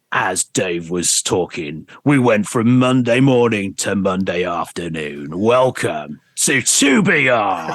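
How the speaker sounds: low, very slow, deliberate radio DJ voice. Retelling how the station boss came back after the news to do the weather, imitating him. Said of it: "He'd go".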